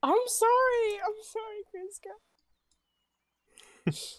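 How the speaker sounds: crying while talking. Told they're blocking the bridge, a character apologizes, sobbing.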